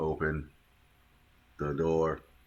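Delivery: mechanical, machine-like robot voice. During an escape scene, the speaker addresses a door: robot voice. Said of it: "I'm trying to speak in robot voice".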